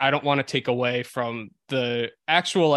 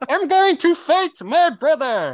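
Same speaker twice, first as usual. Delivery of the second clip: mumbling fighter voice, higher and louder; 8 dB louder than usual. Doing an impression of Tom Hardy in Warrior: Tom Hardy impression. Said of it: "You wanna hear my impression of Tom Hardy in Warrior?".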